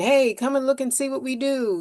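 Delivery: high hawker bellowing through a megaphone. Describing pushy outreach, mimicking a shouting voice with a megaphone. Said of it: "shouting voice with the megaphone going".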